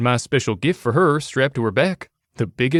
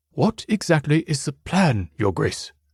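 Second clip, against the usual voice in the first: slow, hushed whisper; 2 semitones higher than usual. Reading a story aloud, a butler asking the plan: whispering. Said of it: "Bugs whispered to us".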